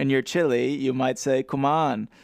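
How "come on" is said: put-on Jamaican accent. Joking about how someone would ask for a spice: Jamaican accent. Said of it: "if you were a Jamaican asking for a spice".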